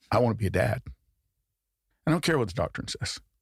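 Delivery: acted voice fighting not to cry, near tears. Retelling a choice to put family over doctrine, holding back tears. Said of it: "I'm gonna try not to cry".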